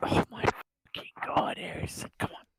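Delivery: speaking really quietly and softly. Urging another player called Harrison to hurry, talking really quietly. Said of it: "you're talking really quietly".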